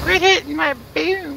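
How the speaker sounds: very high, creaky, squeaky grandma voice.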